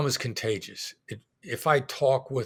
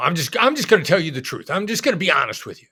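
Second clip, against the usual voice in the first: loud, fast, direct, no-nonsense, assertive bluntness; 5 semitones higher, 8 dB louder than usual. Demonstrating how the fight guy talks, in an assertive voice. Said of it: "the fight guy's assertive".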